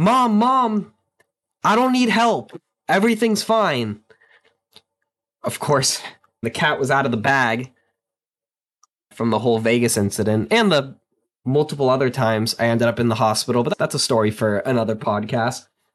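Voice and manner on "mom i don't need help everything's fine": high, slow yelling with "mom" stretched out. Retelling yelling back at their mother pounding on the door, retelling a yell. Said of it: "And I'm just yelling at my mom".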